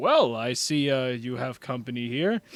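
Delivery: robotic character voice. Voicing a robotic figure who appears outside the door: robotic figure voice. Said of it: "and he goes".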